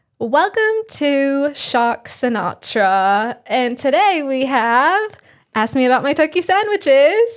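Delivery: slow, drawn-out fake British accent. Opening the show with a co-host, in a fake British accent. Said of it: "our fake British accents".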